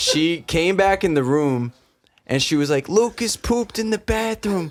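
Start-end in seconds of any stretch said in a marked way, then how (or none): 2.9-4.7 put-on speaking in Staten Island accent. Retelling what a six-year-old classmate announced in class: imitating thick Staten Island accent. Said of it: "a thick accent".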